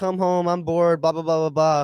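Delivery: pleading, begging tone. Retelling how she would beg the speaker to come home: imitating someone begging. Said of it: "begging me to".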